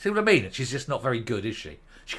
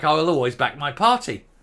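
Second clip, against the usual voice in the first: plain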